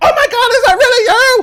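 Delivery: put-on really loud little girl voice. Voicing a little girl who calls out in surprise: really loud little girl voice. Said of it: "And then really loud, you'll hear this little girl like".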